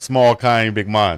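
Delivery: playful put-on Jamaican accent, patois. Answering a co-host who asks about the accent: put-on Jamaican accent. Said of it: "Did I hear a little Jamaican accent?".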